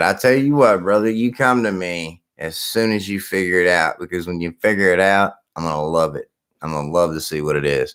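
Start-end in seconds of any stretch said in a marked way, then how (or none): none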